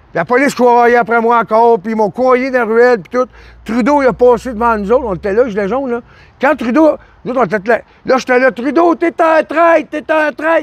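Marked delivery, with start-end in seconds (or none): 8.5-10.6 put-on, slow, high, drawn-out heckling yell. Retelling shouting at a passing politician during a march: imitating own shouting. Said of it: "je criais de même".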